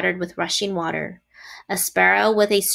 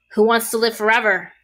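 scornful, sneering delivery; 2 semitones higher, 3 dB louder than usual. Narrator reads a rat's line to a sheep: sneering. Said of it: "Sneered the rat".

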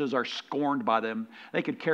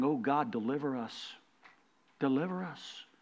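put-on desperate pleading, quieter; 2 semitones higher, 4 dB quieter than usual. Retelling a plea to God for deliverance: imitating someone crying out to God. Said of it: "He's been crying".

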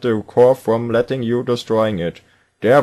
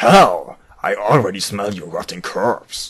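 deep, low, slow, drawling action-hero voice; 4 semitones lower than usual. Voicing a line before a boss fight, Duke Nukem voice. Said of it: "das braucht eine Duke Nukem Stimme".

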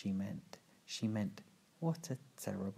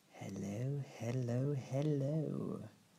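put-on wheezy, wheezing whisper; 3 semitones higher than usual. A man opening his door to the children, in a wheezy whisper. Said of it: "Count Olaf said in a wheezy whisper".

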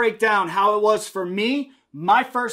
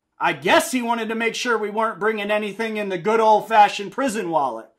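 ordinary delivery

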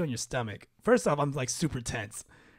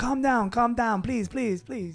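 put-on pleading, much higher pitch; 9 semitones higher, 3 dB louder than usual. Retelling a story, quoting people urging him to calm down; mock pleading. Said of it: "they're like, I'm causing a commotion. Like".

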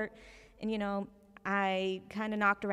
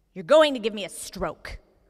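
furious, irate, very loud rant; 11 dB louder than usual. Retelling a phone call from a customer: imitating an irate woman. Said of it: "a very irate, angry woman".

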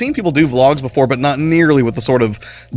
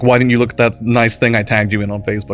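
ordinary talk

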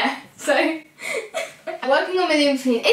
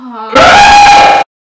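very shrill, very high, very loud shriek; 13 semitones higher, 15 dB louder than usual. Reacting as the next question is picked: scream. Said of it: "Don't put that scream in".

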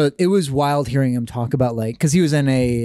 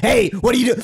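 acted, high, aggressive, confrontational shout; 8 semitones higher than usual. Imagining a delivery person bursting in, imitating someone yelling. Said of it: "they're gonna burst in and just start yelling at me".

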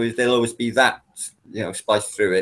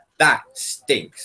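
ordinary talk, nothing marked

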